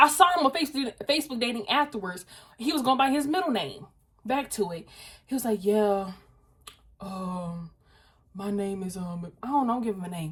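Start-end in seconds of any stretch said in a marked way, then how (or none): 5.6-9.3 man's put-on voice, low, very slow, flirty. Retelling a date's voice notes: imitating a man lowering his voice. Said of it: "be lowering their voice?".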